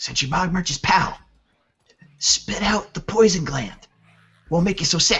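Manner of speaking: secretive stage whisper. A game master voices a woman handing a sack to a player: whispering. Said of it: "she whispers to you".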